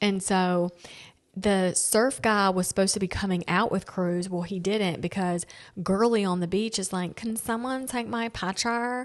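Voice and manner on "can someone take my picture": high, snooty little-snob tone. Retelling what a girl on the beach asked: imitating a snobby girl. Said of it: "Like a little snob".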